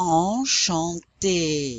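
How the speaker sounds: enchanté drawn out very slowly, syllable by syllable. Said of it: "so this word is pronounced".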